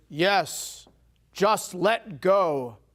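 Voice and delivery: loud booming voice. Telling a joke, voicing the one who answers from above: booming voice. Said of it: "he hears a booming voice".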